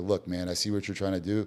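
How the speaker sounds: ordinary delivery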